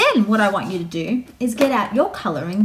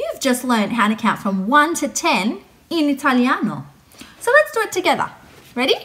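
ordinary delivery

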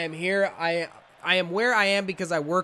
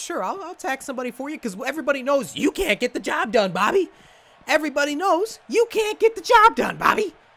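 high-pitched, loud, hyped, worked-up pumped-up ranting; 9 semitones higher, 5 dB louder than usual. Speaker addresses Bobby about their NXT TakeOver match, high-pitched and pumped up. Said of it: "I don't know why my voice gets so high-pitched".

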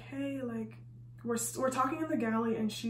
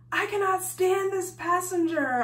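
raised-pitch venting yell; 7 semitones higher, 7 dB louder than usual. Retelling what two people at work yell about their job, imitating their yelling. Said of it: "So when they're yelling".

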